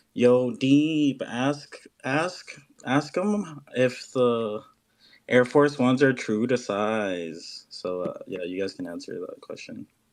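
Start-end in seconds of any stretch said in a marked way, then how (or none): 0.2-7.7 put-on Ottawa accent. Relaying a man's question in his voice as a tribute, imitated Ottawa accent. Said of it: "I'm gonna do it in his voice, in his Ottawa accent".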